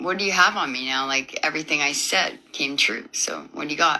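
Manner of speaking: ordinary talk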